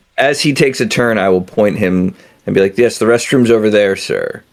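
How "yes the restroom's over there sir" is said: brazen, showy, brash, attention-grabbing call-out. Planning how to point a man to the restroom, loud and brash. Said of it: "in such a loud and brash manner".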